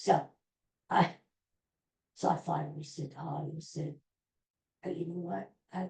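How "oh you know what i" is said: whispering, quieter. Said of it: "why am I whispering?".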